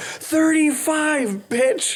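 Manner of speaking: put-on screaming. Retelling a man who kept flushing the toilet, retelling a scream. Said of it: "And he screamed out".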